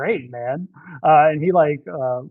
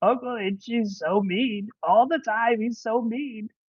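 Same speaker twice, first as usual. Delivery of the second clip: high-pitched, tearful, sobbing goblin voice; 7 semitones higher, 4 dB quieter than usual. Voicing a goblin complaining about his uncle at the bar: crying goblin. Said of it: "and he's crying, and he says".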